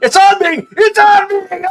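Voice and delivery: very loud, very high, drawn-out panicked shrieks. Acting out a mechanic's shouts during a story: retelling a panicked scream. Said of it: "They screaming".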